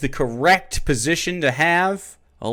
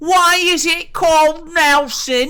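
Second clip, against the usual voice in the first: put-on drawn-out, very high English child voice; 12 semitones higher, 4 dB louder than usual. Doing an impression of an average english child: english child voice impression. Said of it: "This is an average English child. This is my impression of one".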